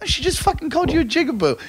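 very high, heated, angry outburst. Retelling a confrontation at a nightclub: retelling own angry outburst. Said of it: "I got really angry".

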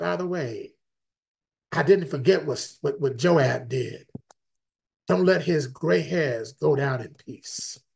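put-on whisper. Retelling someone's last words before dying: imitating a whisper. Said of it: "And then he whispers".

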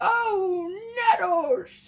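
very loud, high yelp of pain. Reading a story, a goat that just butted into a tree: crying out. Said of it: "cried the goat, rubbing his head".

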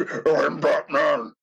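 put-on demonic voice. Speaker riffing on movies, quoting Batman again: demonic Batman voice. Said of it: "the most demonic voice".

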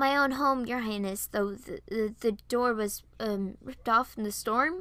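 ordinary delivery

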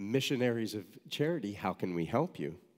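ordinary talk

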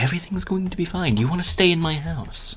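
high, mock suspicious, shady voice.

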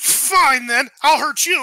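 slow, really angry outburst. Narrator voices a character just pushed off balance by a player, angry. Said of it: "he immediately just gets really angry at you".

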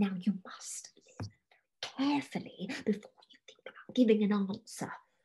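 soft, hushed whisper kept under the breath. A mother waits at the foot of the stairs and speaks to her daughter, whispering. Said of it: "She began to whisper".

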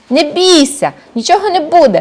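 high, hurt, offended outcry. A girl answers her mother's scolding; offended exclamation. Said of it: "ображено вигукнула дівчинка".

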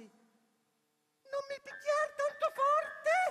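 tiny, thin, pleading voice, very high. Reading a story aloud, a hidden voice pleads with the man raising his axe, thin tiny little voice. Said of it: "sentì una vocina sottile, sottile".

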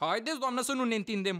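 plain

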